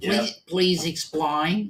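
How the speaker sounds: put-on Australian accent. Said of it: "You've got to have the right accent to say that".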